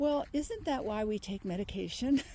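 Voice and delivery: plain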